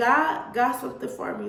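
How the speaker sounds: plain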